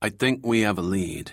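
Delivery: ordinary delivery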